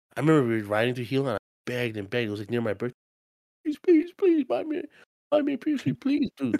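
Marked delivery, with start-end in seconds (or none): 3.6-6.6 very high, whiny, mock ugly-cry sobbing. Retelling begging mom for a PS3 on a car ride, imitating own ugly-cry begging. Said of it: "I was ugly crying, like sniffling".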